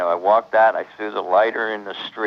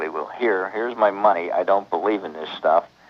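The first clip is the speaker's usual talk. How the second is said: ordinary talk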